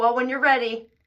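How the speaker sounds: mock, very smug delivery. Speaker repeating what listeners have heard them say, retelling a smug remark. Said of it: "I say it very smugly".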